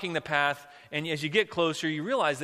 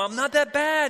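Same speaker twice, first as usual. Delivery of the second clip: put-on small, high, faintly offended, indignant voice; 11 semitones higher, 6 dB louder than usual. Telling a story, a hidden voice speaks up a second time: a little indignant. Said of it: "the voice sounds a little indignant".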